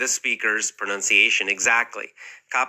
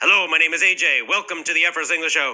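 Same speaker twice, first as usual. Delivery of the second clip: firm, strong, pitched-up speaking voice; 5 semitones higher than usual. Show host demonstrating for learners how to speak when copying audio: strong voice. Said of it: "Speak with a strong voice".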